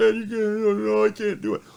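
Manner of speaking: mock, very high, sobbing little kid wail. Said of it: "He come crying to me".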